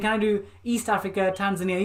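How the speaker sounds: ordinary talk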